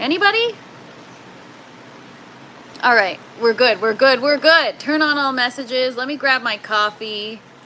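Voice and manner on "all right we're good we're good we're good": loud shouting. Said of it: "I don't know why I'm yelling".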